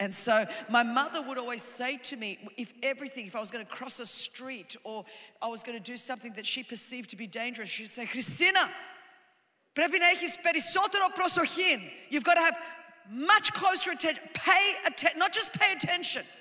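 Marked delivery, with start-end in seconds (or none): 8.0-11.8 insistent, urgent, pitched-up speech in Greek. Retelling a mother's warning before crossing a street: imitating mother's urgent warning. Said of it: "there's such an urgency".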